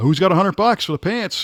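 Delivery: bad auctioneer patter, fast and high-pitched. Retelling how he started a pants auction bit; worst auctioneer impersonation. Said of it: "my worst, you know, auctioneer impersonation".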